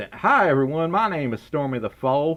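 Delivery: put-on Southern accent. A streamer doing a viewer's donation request to say this in a southern accent. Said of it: "say this in your southern accent".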